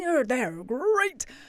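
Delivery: put-on cartoon tiger mascot voice. Recalling the Frosties adverts and going like Tony the Tiger: Tony the Tiger voice. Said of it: "like Tony the Tiger".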